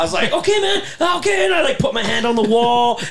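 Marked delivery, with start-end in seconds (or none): 0.3-1.5 very high, flustered, panicky voice. Retelling own reply to a friend yelling in his sleep: imitating own panicked reply. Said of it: "And I panicked".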